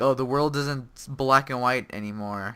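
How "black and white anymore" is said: ordinary talk, nothing marked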